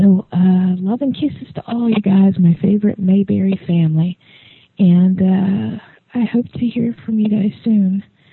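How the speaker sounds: slightly whining, kind of whiny tone. Signing off a late-night message to friends, a bit whiny. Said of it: "Sorry if I sound kind of whiny".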